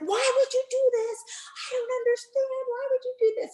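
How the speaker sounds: high-pitched, forceful screaming. Retelling what was said to a daughter at the time: imitating her own screaming. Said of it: "I was screaming at the".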